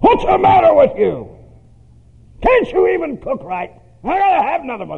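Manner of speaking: very high-pitched, shrill, swooping, abusive screaming. Acting out a husband at home over the soup, retelling him screaming at his wife. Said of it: "Just screams at her".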